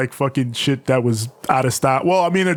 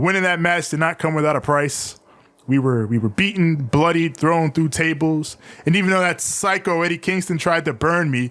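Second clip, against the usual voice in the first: plain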